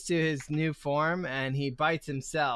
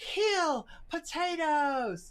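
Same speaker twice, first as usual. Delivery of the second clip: squeaky, very high-pitched character voice; 12 semitones higher, 4 dB quieter than usual. Voicing a fleeing character the way his absent player talks: imitating how Taters talks. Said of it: "'cause that's the way he talks".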